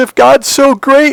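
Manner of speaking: very high, loud, tearful sobbing cry. Retelling the morning his dad burst into tears, imitating dad sobbing. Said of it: "and he's sobbing".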